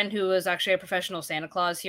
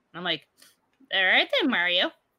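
normal talking voice

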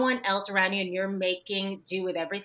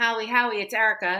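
acted-out loud yelling at full scream; 4 dB louder than usual. Woman retelling pounding on a door that nobody answered, retelling screaming. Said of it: "And I'm screaming".

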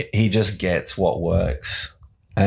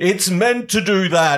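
big booming god-like voice, pitched very high; 13 semitones higher, 3 dB louder than usual. Retelling how he covers a failed yo-yo trick, in his big Odin voice. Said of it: "in his big Odin voice".

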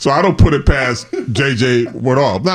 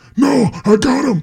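very high, slow, strained, pained voice; 11 semitones higher than usual. Retelling a teammate refusing to share the sacks: imitating Reggie, sounding like talking hurts. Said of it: "He sounded like it hurt him to talk".

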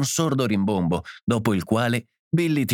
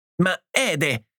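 high shout with suppressed laughter; 7 semitones higher than usual. The mother reacts after one child knocks another down, shouting, holding back laughter. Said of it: "gridò la madre, trattenendosi per non scoppiare a ridere".

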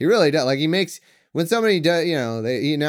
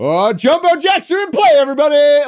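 loud, excited, rising hype-man announcer yell; 12 semitones higher, 8 dB louder than usual. Describing the game announcer calling missed free throws, imitating his hype man yelly voice. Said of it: "he does in his amazing hype man yelly voice".

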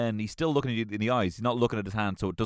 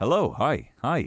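acted out, confident, unhesitating, loud and bold; 3 semitones higher, 5 dB louder than usual. Acting out Ryan Gosling greeting someone: imitating a loud greeting. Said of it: "It's loud. It's not timid".

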